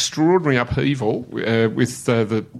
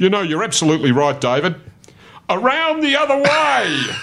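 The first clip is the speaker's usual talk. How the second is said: big booming coach voice, rising in pitch; 8 semitones higher, 4 dB louder than usual. Retelling how Kennedy answered Parko's training advice, in a booming John Kennedy impression. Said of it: "in his booming voice".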